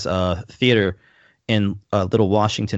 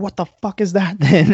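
put-on very high, shrill, full-throated screaming; 12 semitones higher, 5 dB louder than usual. Recounting a night encounter, speaker retells screaming at the figure. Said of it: "And I screamed".

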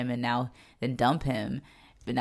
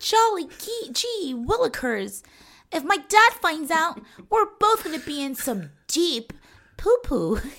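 mocking prim 1950s good-girl voice, higher, louder; 5 dB louder than usual. Mocking a character's prim way of talking, as Sandy from Grease. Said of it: "She's giving Sandy at the sleepover".

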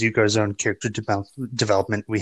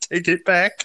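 acted choking back tears; 8 semitones higher than usual. Retelling a scene from a show, quoting a character's reply, mock holding back tears. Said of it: "Holding back tears".

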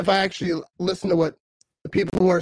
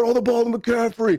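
eager, called-out voice like cheering; 4 semitones higher than usual. Retelling rooting for McCaffrey to get the catch he needed, retelling a yell. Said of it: "I'm yelling like".

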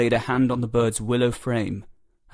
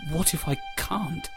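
soft, high, trembling, wavering voice; 6 semitones higher, 5 dB quieter than usual. The skinny lad, gripping the bird machine's levers, answers his master with a quivering voice. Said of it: "his voice a quiver".

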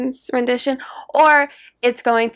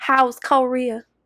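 put-on Southern accent, mock Southern pronunciation. Imitating a co-host's grandma saying korea, imitating a grandma's southern accent. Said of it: "That's how she says it".

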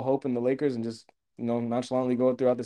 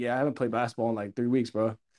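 put-on careless, offhand, no-big-deal nonchalant tone; 2 semitones lower, 5 dB quieter than usual. Showing how the remark sounded, as if between friends: imitating a nonchalant remark. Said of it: "that's the way it sounded like".

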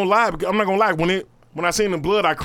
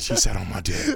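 put-on whisper, lower; 10 semitones lower, 4 dB quieter than usual. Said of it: "you need to really stop whispering".

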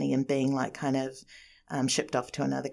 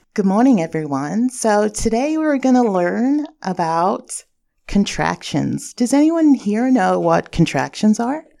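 very loud, high, fake put-on American accent; 7 semitones higher, 11 dB louder than usual. Asked for an example, giving a fake American accent. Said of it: "Can you give me a little example of your American accent".

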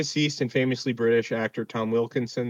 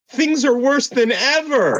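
high, raised heckling yell; 14 semitones higher, 8 dB louder than usual. Describing a film press conference, quoting someone yelling at Harvey Dent: retelling someone's yell. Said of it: "yelling at yell at Harvey Dent".

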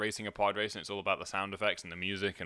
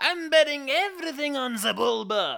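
very high, loud alien voice belted out; 8 dB louder than usual. Describing the pod-race store owner, speaker does a Watto impression. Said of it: "That's not my best impression".

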